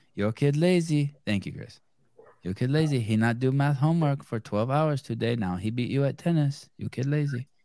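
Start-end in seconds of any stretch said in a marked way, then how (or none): 2.5-7.5 mock Chinese accent, quieter. Speaker does a comic bit for the others in a mock Chinese accent impression. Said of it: "doing an impression of Chinese".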